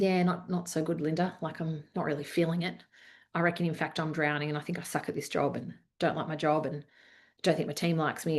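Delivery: low, soft, defeated, beaten tone.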